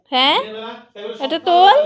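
firm, loud, high-pitched scolding tone.

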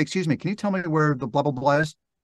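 plain

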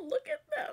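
tearful crying, very high-pitched voice. Watching them together on screen, the speaker says this while crying. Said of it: "I knew I might cry".

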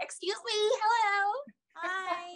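very high, slow American accent. Showing that they can speak with an American accent when they want to. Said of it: "I can really speak like American when I want to".

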